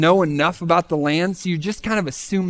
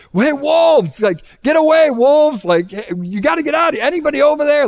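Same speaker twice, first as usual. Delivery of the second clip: frantic, panicked calling out, high-pitched and loud; 9 semitones higher, 6 dB louder than usual. Retelling how a sister called out at animals from the woods: imitating someone panicking. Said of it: "she's panicking".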